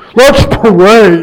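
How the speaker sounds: preacher's pulpit prayer voice, pray drawn out. Talking about how preachers pray, the speaker does a preacher's prayer voice. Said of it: "why preachers got their prayer voice".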